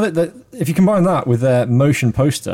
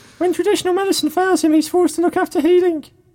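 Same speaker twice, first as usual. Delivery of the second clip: very high-pitched, read-aloud style delivery; 13 semitones higher than usual. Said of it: "so I'm reading Dave's voice".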